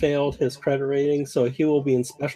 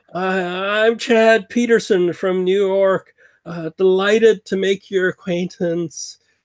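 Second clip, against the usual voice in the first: put-on drunk slurring voice, higher pitch; 5 semitones higher, 5 dB louder than usual. Narrating to players, voicing a drunk man boarding the ship: Chad Peterson's drunk slurring. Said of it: "he's like slurring".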